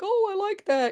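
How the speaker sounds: very high, approving, impressed voice.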